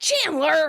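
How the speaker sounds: loud, high, snapped scolding call. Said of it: "in a scolding tone".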